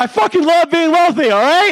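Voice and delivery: all-out shout, very high and very loud. Saying the requested line out loud after being asked to: saying it really loud. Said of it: "I want you to say it really fucking loud".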